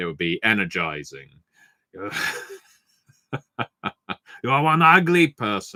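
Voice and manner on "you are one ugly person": calm put-on voice, pitched up. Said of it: "Arnie can do calm as well".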